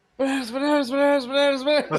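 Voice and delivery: screaming. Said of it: "I'm screaming about bananas at this point".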